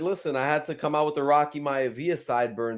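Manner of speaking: normal talking voice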